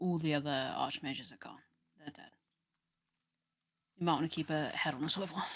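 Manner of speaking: terse, quiet muttering under the breath. Invisible player character walks beside another character reporting: muttered soldier report. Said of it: "literally like under my breath just be like".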